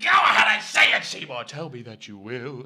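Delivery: very loud, swooping delivery. Showing another speaker exactly how he says the line: imitating how he says it. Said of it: "I can show you exactly how he does that".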